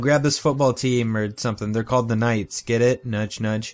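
ordinary delivery

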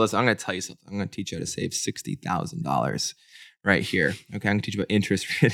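mock all-business, supremely confident, serious delivery. Imitating the financial advice guy from the episode: imitating someone all serious and confident. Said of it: "When he gets all serious".

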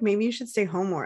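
ordinary delivery

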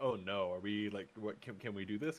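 mock worried, concerned tone. Imitating how a worried doctor might react: imitating worried concern. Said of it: "kinda way".

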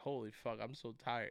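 mock tearful exhaustion. Retelling a funny TikTok, the speaker acts out the guy reacting: imitating someone in tears. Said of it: "And he's like in tears".

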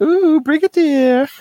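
very high, cheesy, seductive swooning coo. Retelling two characters greeting another at once, in a mock cheesy 80s porn voice. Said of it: "cheesy 80s porn vibes".

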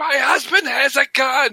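mock very high, drawn-out old lady scream. Retelling a movie scene where an old lady screams at him: imitating an old lady screaming. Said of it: "the old lady is screaming at him".

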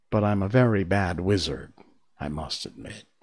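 usual speaking voice

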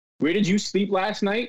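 ordinary talk, nothing marked

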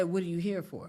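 ordinary delivery

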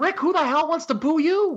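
very high, shouted yell. Retelling own shouting at a wrestler on TV: retelling own yell at the TV. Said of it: "I'm yelling at the T V".

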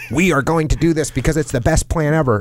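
put-on dorky nerd voice. Giving advice on keeping trust, showing what not to do in a dorky nerd voice. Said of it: "if I go into like a dorky nerd voice".

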